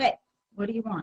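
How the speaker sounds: curt, rude, impatient tone. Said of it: "By your tone of voice".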